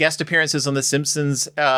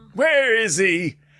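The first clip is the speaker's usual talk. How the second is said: put-on cartoon fish father voice, higher; 5 semitones higher than usual. Imitating an actor's distinct voice as Nemo's father. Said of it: "like, a very distinct voice".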